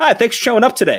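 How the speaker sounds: high, sarcastic, backhanded tone. Retelling a defensive coordinator's remark to offensive players; mock-sarcastic coach remark. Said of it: "in kind of a sarcastic".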